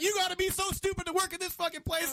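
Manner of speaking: put-on angry abusive cussing rant, pitched way up. Retelling how the caller cussed out the agent again: imitating a caller cussing out. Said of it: "he cusses me out again".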